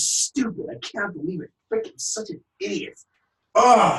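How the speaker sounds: angry, scolding tone, high-pitched and slow. Describing the inner voice that berates you, acting out angry self-scolding. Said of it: "you're so angry at yourself".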